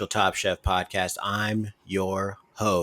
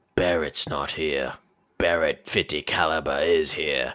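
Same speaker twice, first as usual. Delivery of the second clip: put-on dry delivery in a British accent; 5 semitones lower than usual. Retelling a phone call when someone else answered: imitating a British accent. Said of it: "They're all British, it seems".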